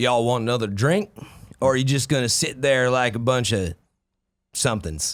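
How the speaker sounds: put-on country cowboy accent. Asked by another speaker for a line in a cowboy accent. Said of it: "Give me some of your cowboy accent".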